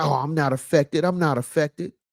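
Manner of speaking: ordinary delivery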